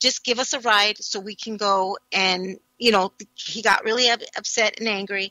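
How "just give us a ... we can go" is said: ordinary talk, nothing marked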